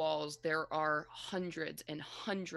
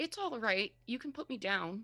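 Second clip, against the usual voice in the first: put-on high voice of a small young child; 6 semitones higher than usual. Narrating a scene, the speaker voices a bird that speaks in a young child's voice. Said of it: "it sounds like a young child's voice".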